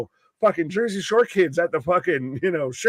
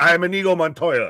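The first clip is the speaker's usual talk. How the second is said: put-on Spanish accent. Joking that a player never sounded like this: Inigo Montoya voice. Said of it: "He's never sounded like that".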